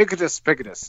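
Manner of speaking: acted sly, knowing delivery. Retelling what she said in reply, mimicking a sly delivery. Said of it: "like all sly".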